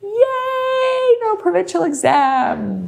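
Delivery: high, squealed, mock excited cheer.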